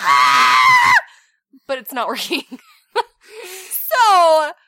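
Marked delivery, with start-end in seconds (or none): 0.0-0.9 loud, startled scream. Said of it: "Usually I'm like".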